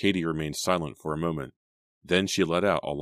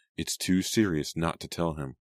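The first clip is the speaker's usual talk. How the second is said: ordinary delivery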